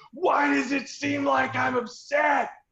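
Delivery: very high, drawn-out scream. Recounting how an upset man answered when stopped, retelling his scream in the face. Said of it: "he screamed in my face".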